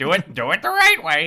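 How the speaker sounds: very loud, high, crow-like squawk. Repeating the quote after a parrot remark: imitating Armin as a crow. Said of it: "He's more of a crow".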